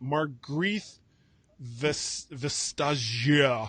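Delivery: fake French accent and French pronunciation. Pronouncing the competition commissioner's name as a joke: put-on french accent. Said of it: "I've been practicing my French accent".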